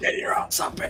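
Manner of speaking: low, hushed, urgent whisper.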